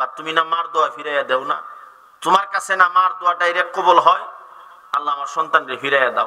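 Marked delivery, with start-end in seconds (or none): none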